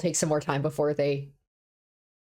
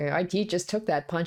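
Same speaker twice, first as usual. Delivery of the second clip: plain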